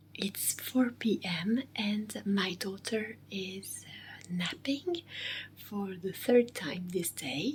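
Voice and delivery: speaking very quietly. Explaining that the daughter is napping, speaking very low. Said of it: "I am speaking very low".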